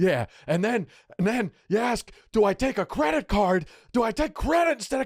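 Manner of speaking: very high, shrill, climbing angry ranting scream. Retelling how a driver screamed at an empty passenger seat, retelling a scream. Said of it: "watching him scream at an invisible me".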